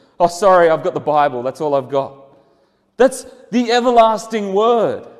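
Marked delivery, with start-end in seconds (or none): 0.2-2.3 mock apologetic, sheepish, hedging put-on delivery. Acting out bringing a psalm to someone in loss: imitating an apologetic tone. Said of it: "so apologetic about the way".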